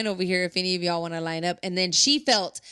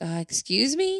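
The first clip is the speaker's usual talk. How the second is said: put-on confused voice, much higher pitch; 7 semitones higher than usual. Retelling how he reacted when she spoke to him, imitating someone confused. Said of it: "he looked at her like confused".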